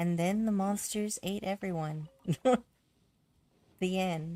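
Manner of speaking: deadpan, straight-faced, creepy storyteller voice. Demonstrating the voice they'd use to end a story, deadpan and straight-faced. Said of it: "saying awful things with a straight face".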